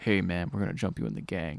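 mock grave, hushed, very deep, quiet, menacing. Retelling a game scene, doing the rival gang member mock dark and serious. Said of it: "it's like really dark and serious".

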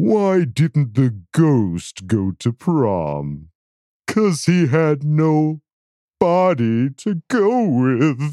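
put-on eerie spooky ghost voice. Telling a ghost joke, in a spooky ghost voice. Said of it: "That spooky voice".

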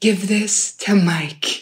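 hushed, slow, secretive half-whisper. Retelling a moment during a family fight: imitating someone half-whispering. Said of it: "she whispers in your ear".

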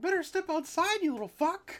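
very high squeak, swooping and swinging around in pitch. Joking about being attacked by a mascot: Mickey Mouse voice. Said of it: "Mickey Mouse is, like, sneaking up on you. He's like".

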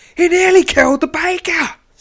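frantic scream, very high and very loud. Reading a scene where a patron accuses the bread man: screaming. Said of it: "screams one of the men".

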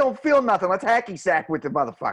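put-on South Boston accent. Imagining South Boston people in the scene, put on a South Boston accent. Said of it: "I just imagine Southy fucking Boston people".

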